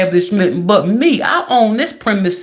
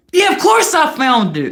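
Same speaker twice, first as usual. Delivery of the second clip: acted screaming; 7 semitones higher than usual. Acting out someone's rude reply screamed at her, retelling a scream. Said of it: "you're screaming at her".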